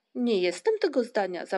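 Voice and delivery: disdainful, scornful, contemptuous tone. A young character objects during a squabble among friends; disdainful protest. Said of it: "zaprotestował wzgardliwy Muminek".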